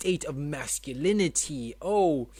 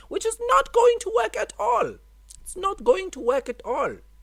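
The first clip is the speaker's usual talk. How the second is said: drifting, slipping Indian accent, very high and loud; 6 dB louder than usual. Complaining about a Wednesday episode deadline, the speaker slips into an Indian accent. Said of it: "I'm transitioning into an Indian accent".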